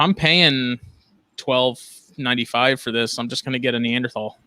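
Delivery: ordinary delivery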